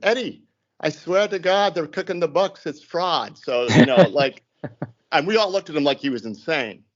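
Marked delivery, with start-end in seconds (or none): 0.0-3.4 put-on strong Irish accent. Quoting a young irish kid who came into his office: irish brogue accent. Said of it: "in his Irish brogue accent".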